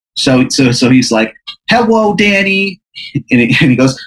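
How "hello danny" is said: put-on very high, squeaky childlike voice. Describing Beelzebub greeting Danny in hell, Beelzebub's child's voice, no R's. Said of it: "Beelzebub talks with like a child's voice".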